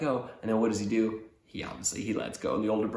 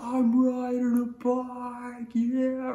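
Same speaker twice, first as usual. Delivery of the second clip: put-on freaking out, very slow, "bike" drawn out; 14 semitones higher than usual. Retelling how a rider freaked out on his bike: imitating excited freaking out. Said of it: "he starts freaking out".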